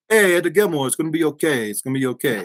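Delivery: put-on heavy, thick, laid-on Italian accent. Telling a travel story, imitating El Menino's thick Italian accent. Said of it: "real thick, amazing like Italian accent".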